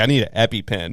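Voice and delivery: plain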